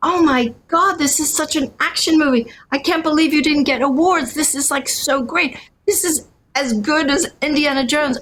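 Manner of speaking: freaking out, excited, gushing scream of delight. Speaker recounts watching the movie last night, retelling excited screaming. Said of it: "I was like screaming with".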